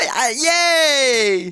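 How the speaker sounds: put-on very high, excited, childlike cheering. Imitating a guy in the crowd cheering: imitating an excited kid-like fan. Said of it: "he's like a little kid".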